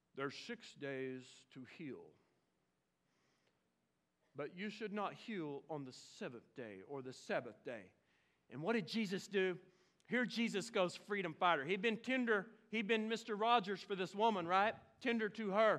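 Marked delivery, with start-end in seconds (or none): 0.2-7.9 very low, hushed, pious preacher tone. Retelling the synagogue leaders criticizing the healed woman, in a mock holy voice. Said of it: "they put on their holy voice".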